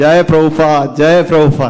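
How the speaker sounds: loud, hard, fed-up frustrated shout. Retelling calling out after nobody opened the doors: imitating own past shout. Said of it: "I shouted".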